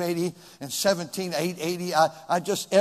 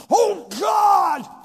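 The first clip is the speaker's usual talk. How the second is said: very high, loud, petulant tantrum cry; 14 semitones higher, 6 dB louder than usual. A speaker addressing a crowd acts out a frustrated person crying out: mock temper tantrum. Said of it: "a puny little man throwing a temper tantrum".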